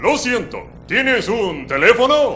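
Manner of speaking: put-on, very high Spanish-speaking voice. Retelling an exchange, replying in kind with the put-on Spanish-speaking voice. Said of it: "I put on my Spanish speaking voice".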